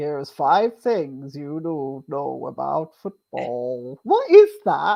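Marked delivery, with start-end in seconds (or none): 0.0-4.0 slow, silly automated robot narrator voice-over. Joking about making a video, imitating that stupid TikTok voice-over. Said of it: "that stupid voice over the top".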